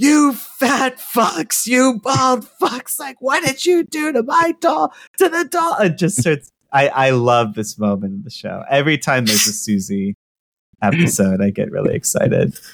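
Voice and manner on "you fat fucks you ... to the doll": very high-pitched, shrill shrieking scream. Recapping a TV show scene, voicing Susie screaming at others: retelling Susie's scream. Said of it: "she just screams like".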